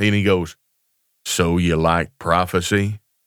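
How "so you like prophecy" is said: put-on deep voice, much lower, slower. Retelling what a man said to the speaker, imitating a deep voice. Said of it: "and it's kind of a deep voice".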